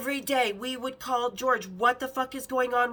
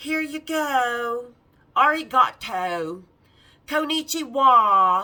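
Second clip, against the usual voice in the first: put-on Valley girl accent, louder; 8 dB louder than usual. Retelling what another girl said handing over her passport: imitating a Valley girl voice. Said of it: "She was all California Valley girl".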